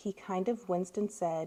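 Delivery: plain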